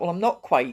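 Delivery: ordinary talk, nothing marked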